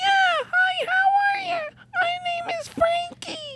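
very high little puppet voice, pitched way up. Answering whether the little puppet talks, speaking as Frankie: voicing puppet Frankie. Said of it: "Does the little puppet talk?".

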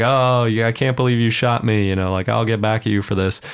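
mock half-shouted cry, mild, held back. Retelling a shootout scene, voicing Curry: imitating Curry yelling. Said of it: "Curry's yelling".

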